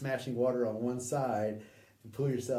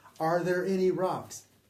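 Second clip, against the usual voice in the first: play-acted, shrill, loud, high-pitched screaming; 6 semitones higher, 6 dB louder than usual. Retelling a man screaming a question right beside them, imitating someone screaming. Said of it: "he screams loud".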